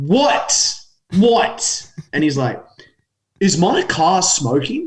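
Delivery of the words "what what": angry, fed-up, high-pitched, mad tone. Retelling answering a driver who rolled his window down, acting out being mad. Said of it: "And I'm still mad".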